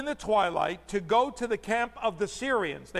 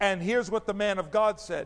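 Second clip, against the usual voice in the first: ordinary talk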